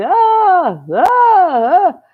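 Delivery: high, loud, far-off calling voice. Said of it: "we keep hearing this voice like".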